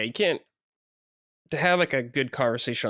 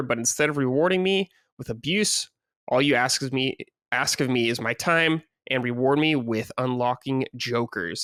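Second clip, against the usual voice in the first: ordinary talk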